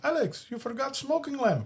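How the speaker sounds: very high, foreign-sounding put-on voice. Retelling a movie scene as the landlord: imitating Rob Schneider's foreign landlord. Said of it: "he kinda plays like a, a foreigner".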